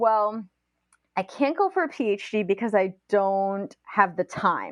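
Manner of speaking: ordinary talk, nothing marked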